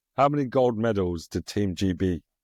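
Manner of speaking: ordinary talk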